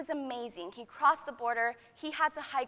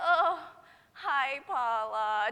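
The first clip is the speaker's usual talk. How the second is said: mock completely exhausted, tired, worn-out voice; 3 dB louder than usual. Retelling a reply to an early-morning greeting, imitating own tired past self. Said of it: "just completely tired".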